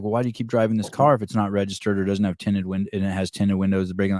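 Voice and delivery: normal talking voice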